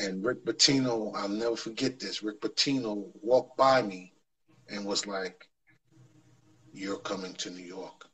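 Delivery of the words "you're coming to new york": half-whispered under the breath, very quiet, barely audible. Retelling what a coach half-whispered while walking by: retelling a half-whisper. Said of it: "This is what he whispered to me".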